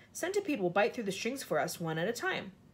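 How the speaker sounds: ordinary delivery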